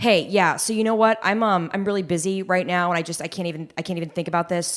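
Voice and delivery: brusque and impatient. Asked to show different tones, demonstrating how not to do it: impatient tone. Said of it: "the impatient thing".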